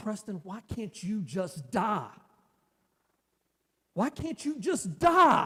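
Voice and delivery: slow, mad yell climbing in pitch. Retelling what his mother yelled while driving: imitating someone yelling. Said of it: "and she's yelling at me".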